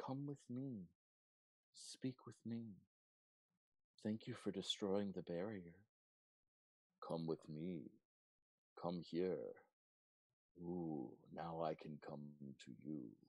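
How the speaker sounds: quiet, barely audible half-whispered pleading. Voicing unseen people who half-whisper to a player: quiet half-whispering voices.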